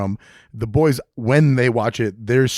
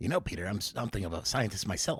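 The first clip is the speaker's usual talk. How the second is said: put-on weaselly voice, lower and quieter; 3 semitones lower, 14 dB quieter than usual. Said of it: "You made him kinda sound like a weasel".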